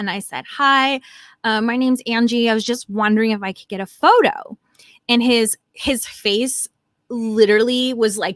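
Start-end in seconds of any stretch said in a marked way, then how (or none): none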